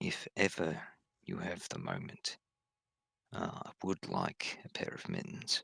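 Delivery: secretive, hushed, conspiratorial whisper. Voicing a character who leans close to ask a favour: conspiratorial whisper. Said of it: "leans down and whispers, uh, almost conspiratorially".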